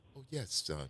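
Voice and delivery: on-air radio host voice. Teasing another speaker about the nurses' visit, [name] on the radio voice. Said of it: "the [name] on the radio voice".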